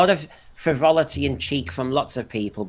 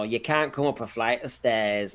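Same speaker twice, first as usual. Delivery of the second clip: put-on Mancunian accent, quieter; 6 dB quieter than usual. Recalling a failed companion character's line on the stairs: Mancunian accent. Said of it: "he does it in a Mancunian accent".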